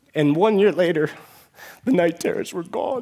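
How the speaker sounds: emotional voice, full of feeling, slightly high. Telling of a student's turnaround, the speaker gets emotional. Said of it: "I'm a little emotional this time of year".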